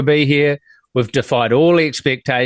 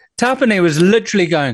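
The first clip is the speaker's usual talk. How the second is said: plain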